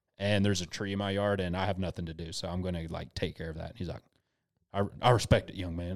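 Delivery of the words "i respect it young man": put-on good old Southern cop voice. Retelling how a cop at the blockade answered him, imitating a good old southern cop. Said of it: "like a good old Southern cop".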